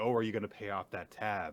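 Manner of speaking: plain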